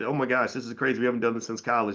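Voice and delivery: ordinary delivery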